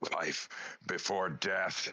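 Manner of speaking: growled delivery. Narrating a wounded fighter lifting his battle axe at a foe, growling. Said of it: "he just growls at this thing, and he says".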